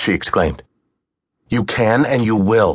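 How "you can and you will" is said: commanding, slower. Reading a story, Sin answers her objection, commanding. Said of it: "he commanded".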